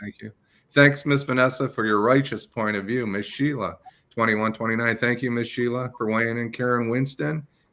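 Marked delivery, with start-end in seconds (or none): none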